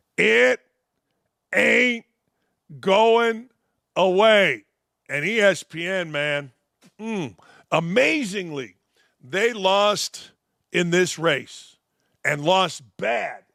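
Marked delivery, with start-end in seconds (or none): 0.2-4.7 very slow, loud, emphatic, word-by-word delivery. Speaker repeats their last statement to the audience: said very slowly. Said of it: "let me say it very slowly".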